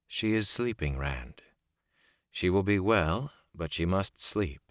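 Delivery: ordinary delivery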